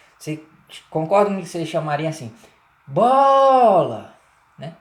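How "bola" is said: heavy, loud, stretched stress on bo in bola. Calling a ball to come closer, loud, drawn-out bo in Bola. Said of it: "o O da primeira sílaba, bo, ele é um O que é pronunciado com mais força, com mais intensidade, demora mais".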